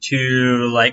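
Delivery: ordinary delivery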